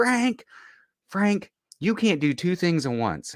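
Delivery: very high-pitched voice. Quoting mom talking to dad during a fight, very high-pitched voice. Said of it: "My mom's very high pitched, like".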